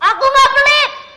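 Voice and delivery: high, loud snapping voice. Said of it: "dibentak diem aja".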